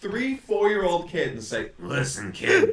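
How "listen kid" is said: miserable ghoulish voice. Imagining telling his young kid something, in a ghoul-like voice. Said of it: "why do you sound like a ghoul".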